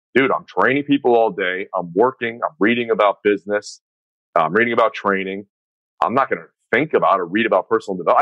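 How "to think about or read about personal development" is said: ordinary talk, nothing marked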